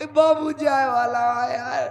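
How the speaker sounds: tearful, crying delivery.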